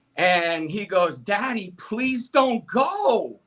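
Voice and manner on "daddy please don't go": put-on very slow, high, tearful, crying child's pleading. Retelling how his crying son begged him to stay: imitating a crying child's plea. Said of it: "he's crying real tears".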